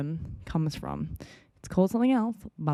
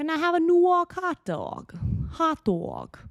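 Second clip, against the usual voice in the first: put-on New York accent, very high and slow; 11 semitones higher than usual. Trying out an accent despite expected abuse, in a put-on New York accent. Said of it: "I kind of have an okay New York accent".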